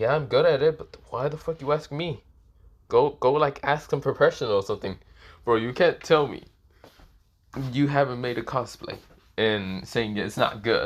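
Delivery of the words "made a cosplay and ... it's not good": ordinary talk, nothing marked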